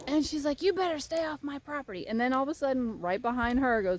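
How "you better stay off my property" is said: high-pitched, loud hollering. Retelling how a woman ran up to her, imitating her yelling. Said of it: "starts yelling at me".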